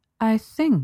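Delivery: drawn-out, weighing each word. She tells her bound pet what she thinks, slow and ponderous. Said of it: "she said slowly, ponderously".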